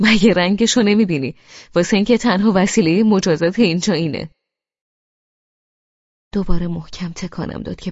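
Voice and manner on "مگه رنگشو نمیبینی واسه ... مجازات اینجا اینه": spoken through laughter with a raised voice. Amir answers Mohammad about why he is shaking the narrator, laughing. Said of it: "امیر با خنده گفت".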